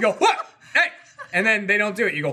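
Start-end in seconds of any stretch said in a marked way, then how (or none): 0.1-0.9 very high, sudden, sharp yell. Showing how to warn a cat who misbehaves: warning yell at a cat. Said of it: "that's the warning".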